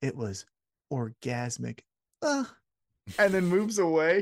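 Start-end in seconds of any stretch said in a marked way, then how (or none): 0.0-1.8 hushed, confiding stage whisper spoken close to ear. Retelling someone half-whispering into another's ear: imitating a half-whisper. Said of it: "he gets into his ear and he whispers".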